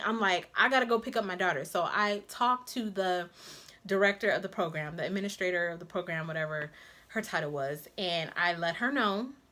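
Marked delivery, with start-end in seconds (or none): 0.6-1.6 mock panicked voice. Retelling learning nobody would watch the baby: imitating own panicked words. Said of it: "I'm panicking".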